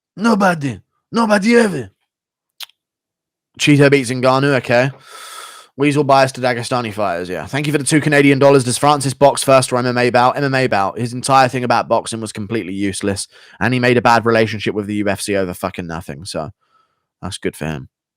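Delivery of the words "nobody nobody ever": put-on high, Portuguese-sounding accent. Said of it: "he sounds like a Portuguese guy".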